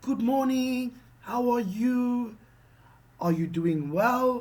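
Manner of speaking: energetic delivery, high pitched and slow.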